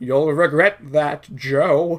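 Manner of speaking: slow weird scientist voice. Retelling a movie scene, voicing the character Frankenstein: weird Torgo-like scientist voice. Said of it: "a weird Torgos kinda, like, scientist kinda guy".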